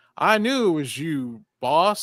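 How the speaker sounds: stiff, robot-like voice. Quoting a movie line: imitating Randy Quaid's robot voice. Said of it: "he talks like a legit robot".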